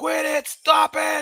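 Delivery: put-on very high, very slow, drawn-out, creaky old-man holler. Commentating a boxing match, imitating the referee yelling: imitating an old man yelling. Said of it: "He sounds like an old man telling everybody to get off his lawn".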